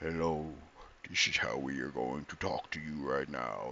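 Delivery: weird, unsettling, deep, low, hushed eerie voice. Retelling what a startling pronunciation tool said: imitating a creepy low voice. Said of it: "I did not expect that voice to be that low".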